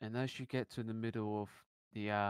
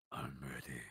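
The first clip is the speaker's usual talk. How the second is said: very low, gravelly put-on voice, dropped way down; 9 semitones lower, 7 dB quieter than usual. Retelling what Armstrong said over the monitor, in a Batman voice. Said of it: "you could just hear in a Batman voice".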